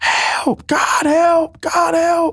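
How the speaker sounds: acted, desperate, very high, very slow drawn-out screaming. Retelling lying on the ground after an accident: retelling own screaming. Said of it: "I'm screaming out".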